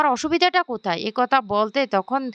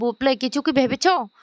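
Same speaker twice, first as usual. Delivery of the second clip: usual speaking voice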